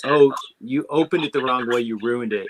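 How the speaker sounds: plain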